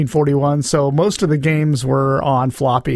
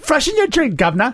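very high fake put-on British accent; 10 semitones higher than usual. Answering a request to say something British: put-on British accent. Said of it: "can you say something about the governor?".

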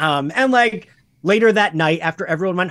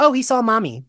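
mock breezy, far too casual, pitched up; 6 semitones higher than usual. Retelling how mom explained the child's fright: imitating mom's casual tone. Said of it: "You're being too casual about this".

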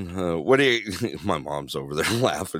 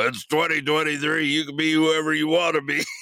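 acted yell, much higher pitch; 9 semitones higher than usual. Retelling what the speaker yelled out in a restroom, retelling a yell. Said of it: "And I yell out in my voice".

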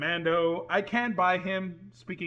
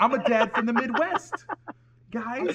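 put-on loud, pitched-up Boston accent on every word; 6 semitones higher, 6 dB louder than usual. Riffing on Mark Wahlberg's accent in the Transformers movies, doing a Mark Wahlberg impression. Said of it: "Mark Wahlberg outside of a Boston accent".

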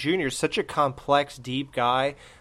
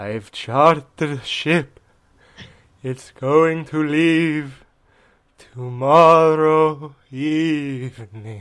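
very slow, loud vampire voice, words drawn out; 6 dB louder than usual. Reading film lines with a partner, the speaker does Dracula's part in Dracula voice. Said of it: "here's Dracula".

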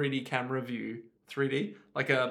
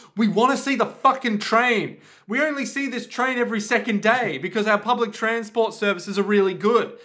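mock angry ranting, higher and louder; 8 semitones higher, 9 dB louder than usual. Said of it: "And they're like".

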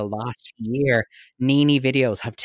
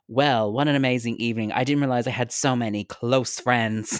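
ordinary delivery

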